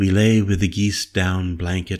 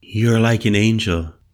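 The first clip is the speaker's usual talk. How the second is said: ordinary delivery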